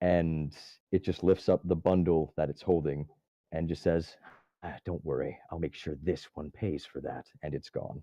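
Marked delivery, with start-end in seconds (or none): 4.6-7.3 scornful sneering, lower and quieter. Narrating a fight, voicing a creature that sneers at the player after being hit. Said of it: "it sneers at you".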